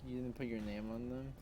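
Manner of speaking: ordinary talk, nothing marked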